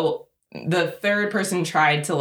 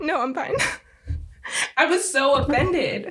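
very high voice, right on the edge of crying; 9 semitones higher than usual. Recounting feeling offended by what someone said, on the verge of tears. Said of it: "am I about to cry?".

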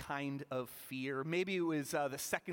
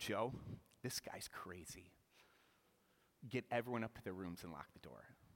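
dead-serious deadpan delivery, very low and soft; 8 semitones lower, 9 dB quieter than usual. Speaker retelling a prank on joe, retelling a deadpan line. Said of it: "with the most deadpan look I could muster".

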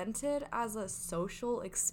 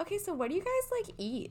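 put-on, over-bright, cheery sing-song, pitched very high; 10 semitones higher than usual. Describing a YouTube video that weighs women on camera, mock very cheery voice. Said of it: "say in a very cheery voice".

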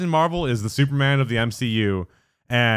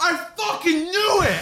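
put-on very high, full-throated, shrill all-out yell. Retelling a moviegoer who stood up in the theater: imitating a loud shout. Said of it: "as loud as he could".

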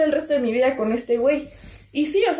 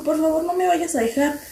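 mock-tearful voice, crying while pleading; 2 semitones higher than usual. Retelling what someone said while hugging the speaker, imitating someone crying while begging. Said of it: "Y me abrazó y se puso a llorar".

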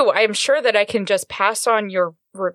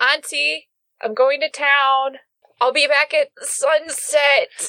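raised, high-pitched calling-out voice; 6 semitones higher than usual. Player's character tells auntie about going to town, raised voice. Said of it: "I raise my voice and I say".

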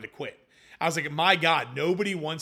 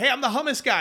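put-on loud yell, projected far; 9 semitones higher, 4 dB louder than usual. Retelling reaching a gated farm and calling to her across the field: retelling a yell across a field. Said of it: "I'm yelling at her across the field".

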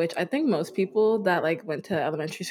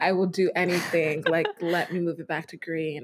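plain

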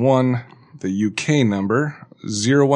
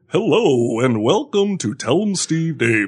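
slow, pitched-up put-on radio announcer delivery; 5 semitones higher than usual. Showing what to stray away from, in a fake radio voice. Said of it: "This is what you got to stray away from. ... Like that fake, like. That radio voice".

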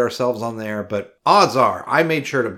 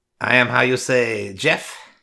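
fake French accent. Introducing oneself by name while signing off, mock French accent. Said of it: "And then you did it in French".

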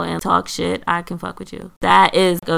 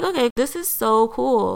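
heavy, dry, drawn-out sarcastic sing-song; 5 semitones higher than usual. Retelling own reaction when the ticket booth has no tickets, retelling a sarcastic remark. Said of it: "It's sarcastic because I'm just like".

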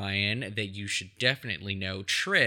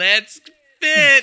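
over-the-top jolly voice, very high and very loud; 13 semitones higher, 15 dB louder than usual. Retelling a jolly fitness camp character's line: imitating a high-pitched jolly voice. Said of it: "his, like, high-pitched voice".

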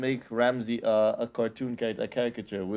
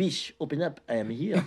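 slow, fancy fake French accent; 3 semitones higher than usual. Personifying Ciroc in a bit about drug personalities, put-on French accent. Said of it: "But with a French accent".

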